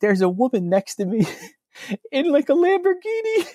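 ever-rising swooping high voice. Quoting a man telling his story, voice climbing higher as he goes. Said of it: "his voice starts getting higher".

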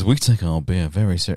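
put-on American accent. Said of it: "he wants to speak like that".

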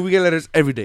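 offhand, casual, nonchalant, matter-of-fact tone. Retelling a character's line about complaints: imitating nonchalant delivery. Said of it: "she said it so nonchalant".

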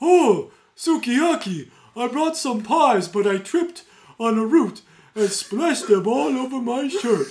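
very loud, slow, drawled cartoon bear voice. Mocking how a voiceover actor sounds as Kubayashi, in his slow cartoon-bear voice. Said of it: "sounds like Yogi Bear. ... slow dog".

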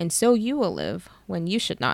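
ordinary delivery

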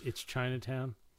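ordinary delivery

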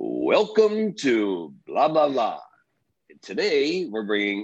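put-on booming announcer voice. Recalling a voice on tapes played over the car radio, booming radio announcer voice. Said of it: "this booming voice would come over the radio".

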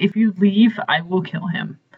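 ordinary delivery

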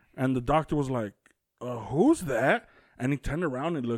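ordinary delivery

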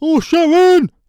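put-on celebrity voice, very high, very loud, belted. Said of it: "I'll do [name]".

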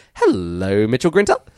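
rising pitch, upward lilt through hello. Recalling a greeting always said the same way: rising pitch through 'hello, Mitchell Grinter'. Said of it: "It always had this upward inflection, the same cadence".

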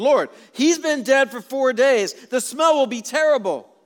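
protesting, objecting tone.

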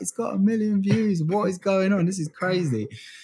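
thrilled screams at very high pitch. Recalling waking up to a million views, retelling excited screaming. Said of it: "running around the house screaming like".

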